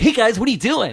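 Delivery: goofy, wacky neighbor-type voice. Describing the third movie trailer to a co-host, doing Lex Luthor as wacky neighbor. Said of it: "Lex Luthor's like their wacky neighbor".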